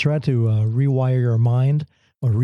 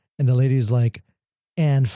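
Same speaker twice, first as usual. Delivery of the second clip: ordinary talk, nothing marked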